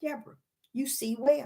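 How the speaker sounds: hushed, soft, gentle quiet voice. Retelling what the Father said to her, in a quiet voice. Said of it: "I hear this quiet voice say".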